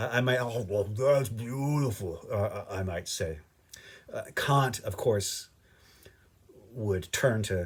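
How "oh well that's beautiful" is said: put-on mouth-full, chewing while talking. Acting out eating a cheeseburger and calling it beautiful: mock talking with mouth full. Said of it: "with my mouth full and sauce dripping".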